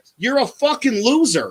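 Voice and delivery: acted, high, angry scream. Retelling yelling at a guy in the middle of the grass, retelling a scream. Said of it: "I'm screaming this".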